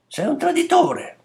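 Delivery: put-on raging child's cry, furious, very high outburst. A child, playing a game, accuses a man, angry yelling. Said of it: "urlò il bambino".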